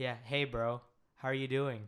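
acted relaxed, laid-back tone. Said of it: "I talk like".

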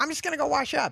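put-on New York accent. Speaker retells a man heading out before lunch, imitating Marty's New York accent. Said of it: "he's got that New York accent".

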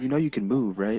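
put-on timid, soft-spoken voice. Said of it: "He's very soft-spoken".

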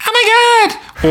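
nasal, high-pitched voice. Describing a worst-case voice a match might have: really nasally high voice. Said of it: "really nasally high voice".

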